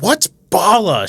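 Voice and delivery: play-acted sudden loud, high yell. Retelling someone asking random passers-by a question: imitating someone yelling.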